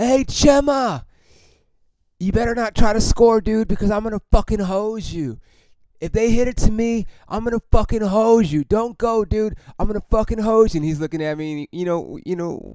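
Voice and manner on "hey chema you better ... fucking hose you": play-acted, high-pitched taunting holler. In center field, yelling at the runner on second base, retelling a yell. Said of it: "I'm yelling at him".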